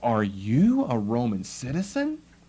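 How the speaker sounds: slow, surprised, genuinely curious, wondering tone. Showing how a question should be interpreted, ask it as a surprised question. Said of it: "a question of surprise".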